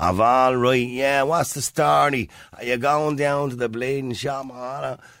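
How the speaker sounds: thick, lazy Dublin accent, "shop" drawn out. Demonstrating the accent that has crept into Ireland: lazy thick Dublin accent. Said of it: "If you have an accent like that".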